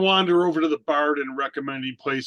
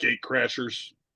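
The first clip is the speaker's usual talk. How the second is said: quiet, conspiratorial, leaning-in whisper; 2 semitones lower, 3 dB quieter than usual. At a party, a tabletop player's character leans in close: quiet whisper. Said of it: "I'll just lean in and quietly whisper".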